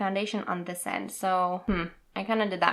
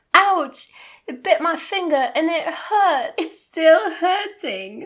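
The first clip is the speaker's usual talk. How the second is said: put-on British accent, raised, slow and drawn out; 9 semitones higher, 7 dB louder than usual. Reading out a text from mom, in a British accent. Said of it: "I said that in a British accent".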